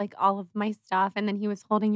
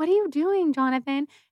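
pitched-up shout, calling out; 6 semitones higher than usual. Retelling calling out to jonathan as he walks off: retelling a shout at jonathan. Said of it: "So I was shouting out to Jonathan".

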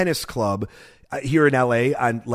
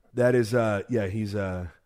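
ordinary talk, nothing marked

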